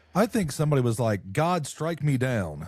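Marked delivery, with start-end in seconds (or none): 1.3-2.7 put-on taunting, sarcastic tone, slow. Imagining someone daring God to strike them down: imitating a sarcastic dare. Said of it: "being sarcastic".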